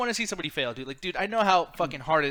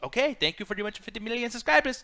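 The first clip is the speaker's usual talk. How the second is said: higher, pitched-up youtuber-style voice; 5 semitones higher than usual. Retelling a YouTuber's farewell video: PewDiePie impersonation. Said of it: "that's my impersonation".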